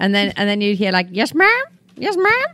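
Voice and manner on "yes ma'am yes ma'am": put-on slow, very high Southern drawl. Retelling what locals in North Carolina would say: imitating a Southern accent. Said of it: "I fell in love with the Southern accent".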